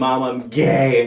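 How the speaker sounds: high, loud, sobbing, weepy, tearful voice. Retelling coming out to mom, imitating own past crying. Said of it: "crying, tears down my face".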